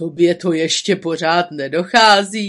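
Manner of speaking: low, dark-toned voice. Narrator reading one character's question to another, in a dark voice. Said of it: "zeptal se Buřinkáč temným hlasem".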